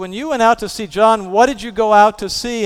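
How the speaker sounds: sarcastic, needling tone. Acting out a quoted question put to listeners: mimicking a sarcastic question. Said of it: "and Jesus is sarcastic".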